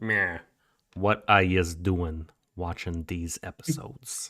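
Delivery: put-on mob boss voice. Showing how the line should sound: fake mob boss voice. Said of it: "in a fake, like, no, mob boss voice".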